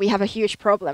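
ordinary delivery

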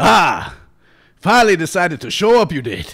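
very loud, booming, swooping, boisterous soldier-of-fortune voice. Game master voicing a stumbling soldier of fortune greeting the party, soldier-of-fortune voice.

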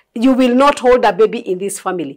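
ordinary talk

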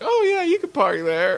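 put-on very high, friendly, genial old man voice. Joking about fooling the neighbors: put-on friendly old man voice. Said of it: "put on the friendly old man mask and be like".

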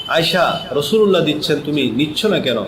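plain

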